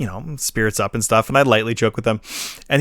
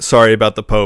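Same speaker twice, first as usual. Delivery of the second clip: put-on apologetic tone, lower; 4 semitones lower, 3 dB louder than usual. Retelling what a guy said about the Pope: imitating an apologetic tone. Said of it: "an apologetic way".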